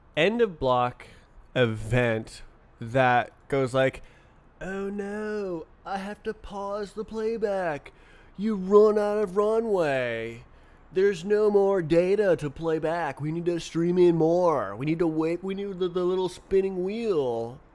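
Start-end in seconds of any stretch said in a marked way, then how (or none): 4.6-17.5 deliberately annoying, put-on voice, pitched higher. Voicing a playback event that has run out of data, most annoying voice possible. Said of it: "In the most annoying voice possible".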